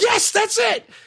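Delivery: very high, squeaky voice, sounding far off. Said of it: "you were like".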